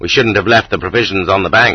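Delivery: plain reading voice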